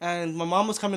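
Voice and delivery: ordinary talk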